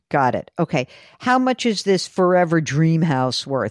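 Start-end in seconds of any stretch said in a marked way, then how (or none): 1.1-3.7 heavily sarcastic, dripping with sarcasm. Speaker asks what a forever dream house is worth, dripping with sarcasm. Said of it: "You notice how I said that dripping with sarcasm?".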